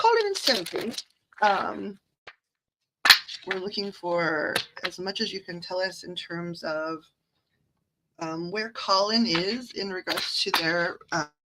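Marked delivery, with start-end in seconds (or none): 0.0-0.9 put-on British accent, pitched very high. Saying the names of the two people this is for, in a british accent. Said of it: "think of in a British accent".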